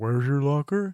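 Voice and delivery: mock talking with mouth full. Recounting a movie scene where a girl answers a boy, mimicking talking with mouth full. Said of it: "with her mouth full, she says".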